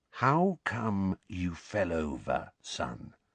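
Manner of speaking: gentle, unnaturally soft, hushed voice. Uncle Vernon asks his son why he fell over, in an unnaturally quiet voice. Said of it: "in an unnaturally quiet voice".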